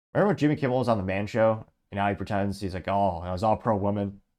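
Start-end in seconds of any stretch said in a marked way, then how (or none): none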